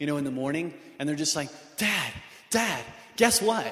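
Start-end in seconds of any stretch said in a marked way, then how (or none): 1.8-3.7 mock giddy, excited little kid voice, drawn out. Acting out kids running in one morning: imitating excited giddy kids. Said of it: "all excited and giddy".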